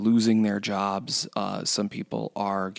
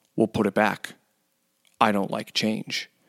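mock, completely earnest, dead-serious tone. Retelling what a customer said about the remodel: imitating a dead serious tone. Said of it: "in the most serious tone".

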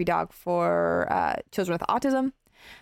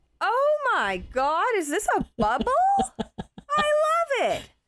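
very high, swooping, sing-song eagle character voice. Showing how animals would react to being put in a bubble, eagle impression. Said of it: "This is my impression of an eagle".

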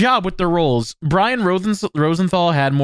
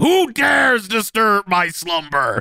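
put-on loud bellowing shout out of nowhere; 3 semitones higher than usual. Retelling a favorite line from a show, imitating Goyle shouting. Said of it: "Jim Pavolo as Goyle just shouting".

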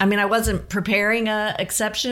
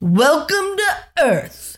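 put-on high, loud, slow, hearty booming movie-star voice. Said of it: "in your best [name] impression".

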